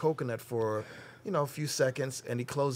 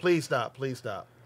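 put-on begging, pleading tone. Retelling how a man dropped to his knees, retelling someone begging. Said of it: "dropped to his knees and was begging".

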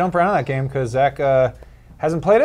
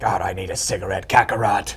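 put-on very low, deep old woman voice; 7 semitones lower, 4 dB quieter than usual. Showing a picture of Vegeta wanting a cigarette, voicing him as an old woman. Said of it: "I have a voice like this because I'm an old woman".

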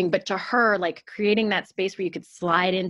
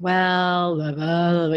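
"well" dragged out in a very slow drawl. Imitating how people sound talking about what they should do: Eeyore voice. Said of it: "they use, like, an Eeyore voice".

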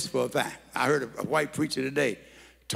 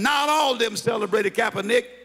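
play-acted high-pitched yell; 9 semitones higher, 4 dB louder than usual. Retelling hearing a preacher on the radio: retelling yelling at the radio. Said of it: "I'm yelling at the radio".

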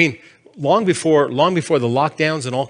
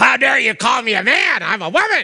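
put-on, outraged, high-pitched, furious screaming; 8 semitones higher than usual. Retelling how a man screamed at a young guy working the store: retelling a scream. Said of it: "the guy started just screaming at him".

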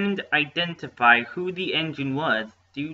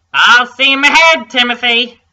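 shrill, very high, very loud calling out; 10 semitones higher, 15 dB louder than usual. Reading the driver calling to the little engine as the passengers board: called out. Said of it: "called out the driver".

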